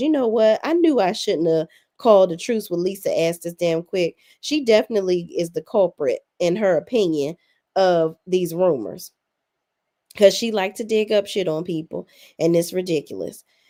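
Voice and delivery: ordinary talk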